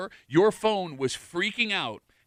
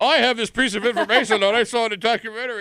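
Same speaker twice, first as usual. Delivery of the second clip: mock old man voice, higher and louder; 4 semitones higher, 7 dB louder than usual. Mocking another speaker's trivia fact: mocking old man voice. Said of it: "could you not do the old man thing?".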